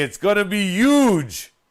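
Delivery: loud, slow ad-announcer voice, huge drawn out. Imitating the commercial guy who couldn't say huge: Fusillo guy who couldn't say huge. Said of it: "this big dude who couldn't say huge".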